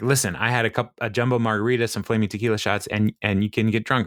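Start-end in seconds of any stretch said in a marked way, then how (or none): none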